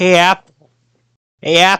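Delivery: weak, half-hearted put-on cartoon voice. Attempting a bad Annoying Orange voice after wishing to do it well. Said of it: "I just wish I could do a good Annoying Orange voice".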